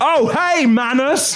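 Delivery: put-on very high, eager, excited hollered shout. Retelling how an excited friend shouted from behind: retelling a shout. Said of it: "I'll do it in my voice, shouting".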